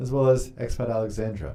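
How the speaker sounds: ordinary talk, nothing marked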